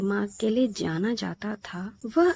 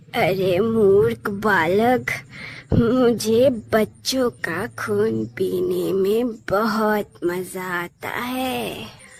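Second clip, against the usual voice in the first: cruel, haunting, eerie witch voice with echo; 4 dB louder than usual. Asked by a boy why she wants the children's blood, the witch answers, eerie echoing witch voice. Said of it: "चुड़ैल की आवाज भयानक गूंज के साथ हवा में तैर गई। / थी और उसके बाल बिखरे हुए थे। उसे देखते ही बच्चों की सांसें अटक गई और वे जान बचाकर भागने लगे। रुक जाओ, भागने की कोशिश मत करो, नहीं तो मैं तुम सबकी गर्".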